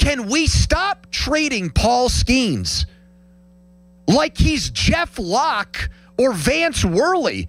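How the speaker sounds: exasperated, climbing voice. A frustrated fan venting, in a raised frustrated voice. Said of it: "my voice is getting raised because I'm getting frustrated".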